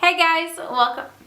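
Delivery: sudden, abrupt vlogger-style voice. Greeting the viewers at the start of a video: very loud greeting. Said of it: "That was super loud".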